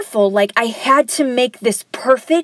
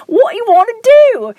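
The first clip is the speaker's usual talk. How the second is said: slow, drawled, put-on Liverpool accent; 11 semitones higher, 6 dB louder than usual. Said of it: "don't get on me about my accent".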